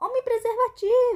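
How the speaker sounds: shrill, very loud, high-pitched, jeering shout. Reading a story aloud, someone in the auditorium shouts a mocking nickname: shouting. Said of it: "alguém no auditório gritasse".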